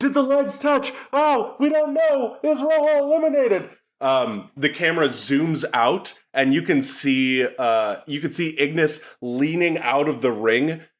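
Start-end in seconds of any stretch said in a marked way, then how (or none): 0.0-3.7 very high, screaming ringside commentator voice. Narrating a wrestling match, voicing the announcers: screaming announcers. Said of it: "the announcers are, like, screaming".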